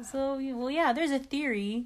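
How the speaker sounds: high, talking-down, condescending tone. Recapping a TV episode, speaker acts out Ross explaining to the others, mock-condescending Ross.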